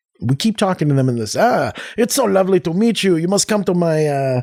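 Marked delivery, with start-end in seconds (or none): 2.0-4.4 high, fake, put-on French accent. Acting out chatting with someone they meet, in a french accent. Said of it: "speak to them in a French accent".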